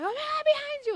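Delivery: very high, loud, thrilled shriek. Describing watching someone play video games, acting out their own screaming; retelling a scream. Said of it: "I'm screaming like".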